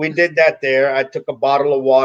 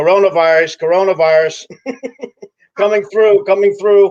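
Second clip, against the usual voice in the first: acted, high-pitched, loud hollering yell; 6 semitones higher, 4 dB louder than usual. Retelling what someone yelled out loud in a supermarket: imitating Gary yelling out loud. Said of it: "here's Gary yelling out loud".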